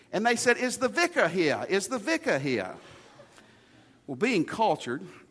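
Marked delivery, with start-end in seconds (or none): 0.5-2.7 put-on British accent with a swooping, sing-song lilt. Retelling what a visitor asked on arrival: imitating a British accent. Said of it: "they had a British voice".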